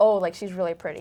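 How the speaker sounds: ordinary delivery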